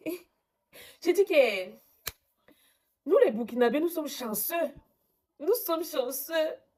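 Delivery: on the verge of crying, high and emotional. Speaker addresses listeners, close to tears. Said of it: "je vais pleurer".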